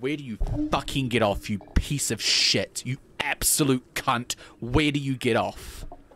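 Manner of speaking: acted, very loud, enraged British yelling. Speaker retells screaming at a man after hearing his voice: retelling an angry british rant. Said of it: "I went full British".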